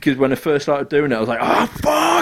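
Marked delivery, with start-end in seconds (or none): 1.4-2.2 very high, shrieking, screamed outburst. Retelling screaming at a game's enemy: imitating own screaming. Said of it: "and just screaming obscenities".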